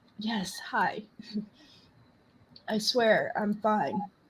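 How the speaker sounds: soft, teary, choked-up voice catching on tears. Greeting a caller named Jennifer and insisting on being fine, while tearing up. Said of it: "I'm just tearing up".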